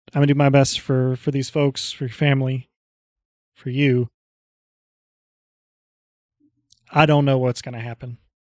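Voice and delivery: most serious, earnest, heartfelt, sincere tone. In character, answering the lord Paul Gallows: serious and sincere. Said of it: "my most serious and sincere expression".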